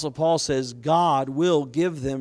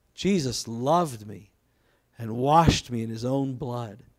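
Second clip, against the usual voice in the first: slow, put-on tearful, weeping voice; 4 semitones lower than usual. Retelling how a dying guest speaker repeated a line: imitating Roy Thompson crying. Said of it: "he'd start crying. He'd go".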